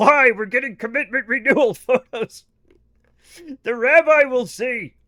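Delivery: loud puppet voice. In a made-up exchange between Ernie and Bert, answer Ernie about his tattoo in a Bert voice.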